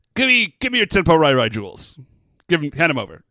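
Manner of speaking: pushy, loud, demanding schoolyard-bully voice. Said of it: "schoolyard bully style".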